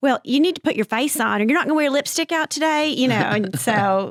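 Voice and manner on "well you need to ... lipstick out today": put-on Texas accent. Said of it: "in our mom's accent like this".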